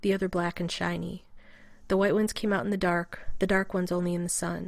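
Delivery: plain reading voice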